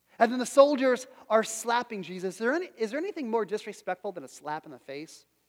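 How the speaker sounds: plain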